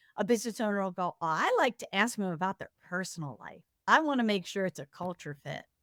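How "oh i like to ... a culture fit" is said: usual speaking voice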